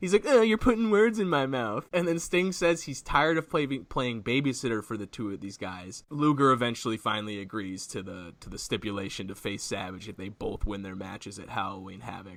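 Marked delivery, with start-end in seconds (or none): 0.2-1.9 very high, derisive, taunting parody voice, pitched way up. Retelling a wrestler berating a rival: mocking Luger's voice. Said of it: "he even mocks his voice".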